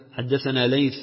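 ordinary delivery

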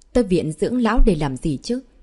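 ordinary delivery

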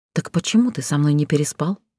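ordinary talk

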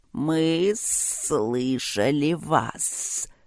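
hissing, serpent-like creature voice. Narrator reads a large creature stepping forward to speak, hissing creature voice. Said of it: "прошипел один".

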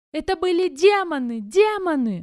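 very loud, high-pitched, shrill, frenzied yelling. Narrator reads the husband's line as he tries to rise, shouting in a frenzy. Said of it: "В запале кричал муж".

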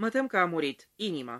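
usual speaking voice

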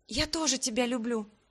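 softly whispered voice. A first-person narrator reads her own reply to him, whispering. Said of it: "шепнула в ответ".

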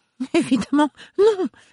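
put-on very high, faltering, guilty, stammering little-girl voice. Narrator reads a woman's reply under accusation, stammering like a child caught out. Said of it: "balbutia-t-elle comme une fillette prise en faute".

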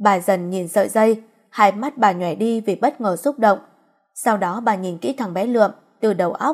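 ordinary delivery, nothing marked

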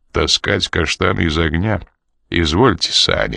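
ordinary delivery

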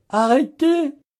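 very high cry with voice faltering, giving way. A man cries out to the enchantress to stop, in a faltering voice. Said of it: "cria-t-il d'une voix défaillante".

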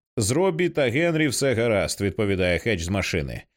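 ordinary delivery

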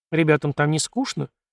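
ordinary delivery, nothing marked

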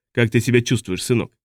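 plain reading voice

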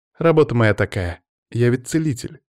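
plain reading voice

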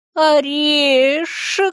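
high, hissing movie-zombie voice. A squirrel staring at a staff answers the narrator, hissing like a movie zombie. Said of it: "прошипела она точь-в-точь, как зомби".

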